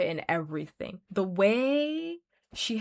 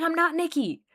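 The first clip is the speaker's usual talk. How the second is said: put-on, high, shrieked, frantic screaming; 8 semitones higher, 4 dB louder than usual. Retelling a scene where Nikki starts screaming: imitating Nikki screaming. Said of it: "Nikki starts screaming".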